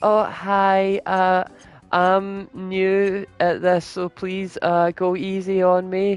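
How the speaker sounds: put-on very high, sweet, innocent baby-boy cherub voice. Retelling a newcomer's first words over the mic, in a sweet innocent baby-boy voice. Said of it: "innocent cherub, sweet baby boy voice comes through and goes".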